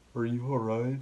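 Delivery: gloomy, miserable, flat, depressed monotone drone. Speaker retells a man asking if they're alright, in a put-on Eeyore voice. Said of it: "it's like the dude from Winnie the Pooh, Eeyore".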